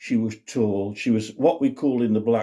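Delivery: ordinary delivery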